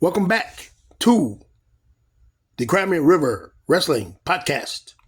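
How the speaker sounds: put-on halting voice, dramatic long pauses between phrases.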